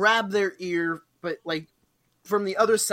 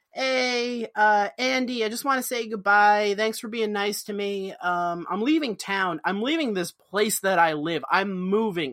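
ordinary talk, nothing marked

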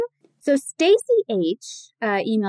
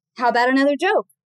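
plain

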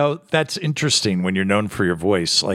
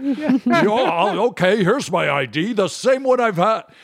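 put-on announcer voice, higher pitch; 12 semitones higher than usual. Retelling what the announcer said in the elevator: Don Pardo impression. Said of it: "he'd be like".

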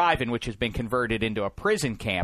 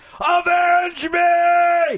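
very high, very loud, shrill, drawn-out shout; 9 dB louder than usual. Retelling a story, the speaker acts out an old man's sudden outburst: retelling a yell. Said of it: "he starts yelling".

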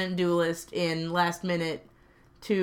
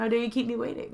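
haughty, high, entitled put-on cat voice; 5 semitones higher than usual. Retelling how the cat acted at the closed door: imitating an entitled cat. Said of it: "this entitled".

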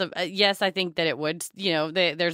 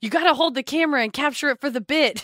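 high-pitched, excited shout; 8 semitones higher than usual. Recalling filming a bit in the street, re-enacting what they screamed: retelling own scream. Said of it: "I also screamed".

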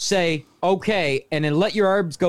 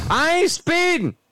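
mock shouting, higher pitched; 10 semitones higher than usual. Joking about being pulled over at high speed: pretend yelling out a car window. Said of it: "I'm gonna yell at the window going".

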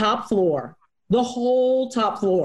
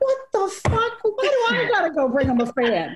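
mock exasperated, fed-up, high, annoyed outburst; 9 semitones higher than usual. Telling a story about being sent to bring someone a fan, retelling own annoyed rant. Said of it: "I'm so mad".

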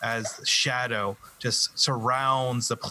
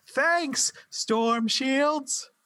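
very high, shouted fake English accent. Somebody far away shouts out during the game scene, shouted fake English accent. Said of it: "you hear somebody shout out in a faux English accent".

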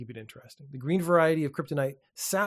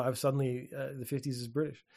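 normal talking voice

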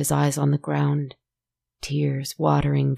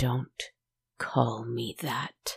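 drawn-out, low, slow, bitter growl; 3 semitones lower, 8 dB quieter than usual. Reading a woman answering the man who called her his love: bitter growl. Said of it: "she growled bitterly".

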